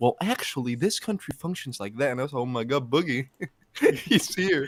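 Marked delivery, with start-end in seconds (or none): 0.0-2.1 mocking, smug know-it-all tone. Teasing the listener about a rant caught on cam video, mocking a know-it-all rant. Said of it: "a fucking Boogie rant where you were like".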